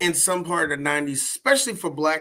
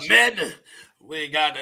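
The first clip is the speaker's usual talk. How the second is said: deep, throaty voice dropped into the throat, slow. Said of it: "It drops down to the throat".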